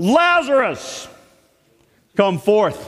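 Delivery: booming, full-force, loud, commanding shout. Retelling a Bible story, acting out the call to raise the dead: a loud shout. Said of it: "spoke in a loud voice, loud enough to raise the dead".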